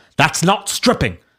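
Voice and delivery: put-on British accent. Reading out an online exchange, the speaker voices Jack Buckby in a British accent. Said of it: "I'm going to read Buckby's voice in a British voice".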